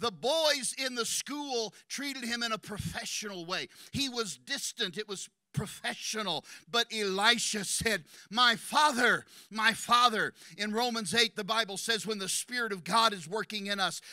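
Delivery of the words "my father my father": acted warm crying out, louder, slower. Speaker teaching from the bible acts out a quoted cry, acting out a warm cry. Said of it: "Listen to the warmth in his voice when he cries out".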